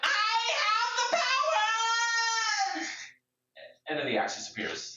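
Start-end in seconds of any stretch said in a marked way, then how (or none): 0.0-2.9 very high, slow, drawn-out delivery, "power" stretched out. Voicing the jester Polly pulling out the axe: voicing Polly the jester. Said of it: "pulls the axe out and says".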